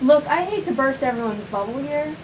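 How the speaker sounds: ordinary delivery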